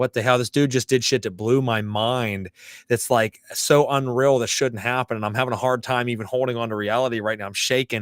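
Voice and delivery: ordinary talk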